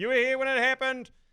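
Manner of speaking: classic Australian yelling, high-pitched and loud. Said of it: "there's a classic Australian goes".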